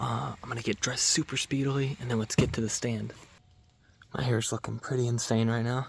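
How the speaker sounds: keeping the voice down. Speaker just arriving at the property near the stand, speaking quietly. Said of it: "I'm gonna speak quietly because my stand is not that far".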